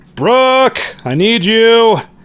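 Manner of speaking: very high shouted call. Voicing a character calling someone down from upstairs: shouting out to someone. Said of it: "you hear Iger kinda shout out".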